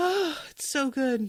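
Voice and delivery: choked-up voice catching with emotion. Speaking to viewers, getting all choked up. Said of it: "I'm just getting all choked up".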